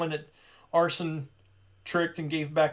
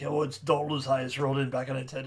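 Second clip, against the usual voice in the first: put-on Irish old sailor voice; 3 semitones lower than usual. Describing Hamel, who was attacked by the creature; Hamel's Irish sailor voice. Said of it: "almost like an Irish version of the guy from Jaws".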